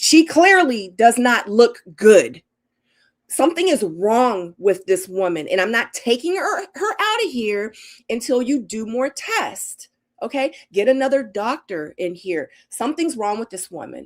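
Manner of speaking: mock upset, angry, slow, forceful yelling. Quoting what they told the doctors about their mom, retelling angry yelling. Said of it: "I was kicking and screaming".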